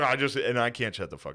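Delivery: ordinary delivery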